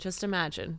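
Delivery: plain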